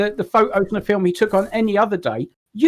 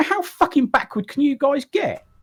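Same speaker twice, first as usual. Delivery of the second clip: heated, exasperated outburst, pitched up, arguing hard; 6 semitones higher than usual. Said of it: "Stop shouting".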